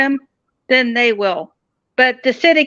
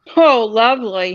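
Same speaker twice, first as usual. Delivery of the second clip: ordinary talk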